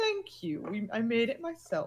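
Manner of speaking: proud, preening drawl with swooping pitch. Voicing a turtle grinning over its shoulder at a compliment: mock-proud preening turtle. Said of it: "preen and be proud of it".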